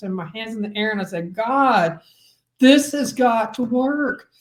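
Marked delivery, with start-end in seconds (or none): 1.3-4.2 slow, drawn-out, tantrum-like scream. Recalling a moment in a field, the speaker re-enacts screaming to god: retelling own scream to god. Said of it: "I was screaming to God".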